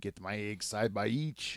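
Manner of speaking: comic, exaggerated Quebec French accent. Contrasting French accents as a joke: mock Quebec French accent. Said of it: "Not to be mistaken with the Quebec French".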